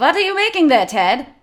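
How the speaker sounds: bad fake Polish accent drifting into German. Playing an interviewer on a cheap set, asking Ted a question: bad Polish accent. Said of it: "It's gonna be a little bit German".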